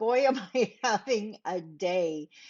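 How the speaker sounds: slow, very drawn-out, stifled laughter. Introducing themself while having a rough day, holding back a laugh. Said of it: "I'm trying not to laugh here".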